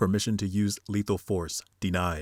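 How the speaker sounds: ordinary talk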